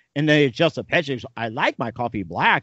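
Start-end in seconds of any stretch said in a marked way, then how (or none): 1.4-2.7 put-on synthesized computer voice, speech-synthesizer style. Retelling an old educational film's voice demo, imitating a computer voice. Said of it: "computer simulation and says".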